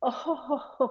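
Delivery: laughing, high and breathy giggle.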